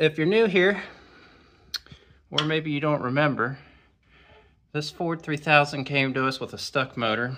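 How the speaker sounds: winded, talking while catching breath, slightly high. Explaining to viewers how the ford came with a stuck motor, out of breath. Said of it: "Let me catch my breath".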